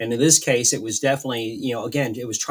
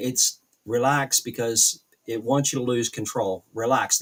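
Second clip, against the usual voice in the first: plain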